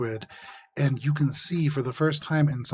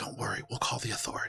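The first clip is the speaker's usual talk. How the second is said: quiet hushed whisper, just breath, barely voiced; 3 semitones lower, 11 dB quieter than usual. Voicing an engineer who speaks to a passing player: whispering. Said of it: "one of these engineers whispers to you".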